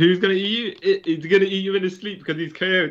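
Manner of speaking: put-on laughing taunt. Retelling soldiers in a plane laughing at a man; retelling soldiers laughing at him. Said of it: "all the soldiers in the plane are laughing at him saying".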